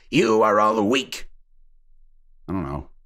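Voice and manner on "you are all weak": put-on overly British soldier accent. Trying out the soldier's line: British soldier voice. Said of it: "The soldier voice seemed a bit too British".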